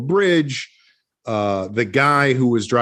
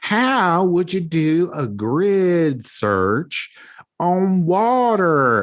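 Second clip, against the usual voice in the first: high, very slow, thick Southern Georgia drawl; 6 semitones higher than usual. Retelling what a woman from Georgia said: imitating thick Georgia accent. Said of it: "she's got a real thick accent".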